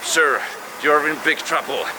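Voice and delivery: ordinary talk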